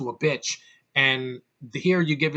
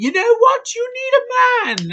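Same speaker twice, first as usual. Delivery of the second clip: put-on very high, loud, sing-song old British lady voice; 8 dB louder than usual. Retelling a movie scene, imitating old british women. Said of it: "old British women are like".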